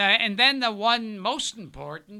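normal talking voice

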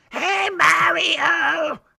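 very high, loud, rasping yell with a drawn-out word. Recalling an old Mario cartoon and imitating a character: Toad voice. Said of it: "I can still hear Toad's voice".

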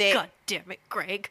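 fed-up, exasperated scolding with cursing. Echoing the other speaker's story about mom: imitating an exasperated mom. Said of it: "And your mom's like".

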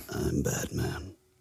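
whisper with a rich tone. Joking that a sick, lower voice fits: Batman voice. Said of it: "Your voice sounds more rich".

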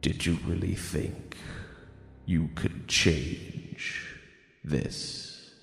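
resonant deep voice. A narrator voices a voice filling the listener's skull, in an echoing deep voice. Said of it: "this echoing deep voice now fills your skull".

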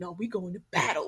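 very serious, firm, meaning every word. Retelling how Ray Lewis talks about football: imitating Ray Lewis, very serious. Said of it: "he is so serious about it".

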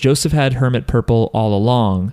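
ordinary delivery

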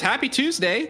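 put-on yell. Telling a story where a passing cyclist calls out to the group, retelling a yell. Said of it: "yells at you and says".

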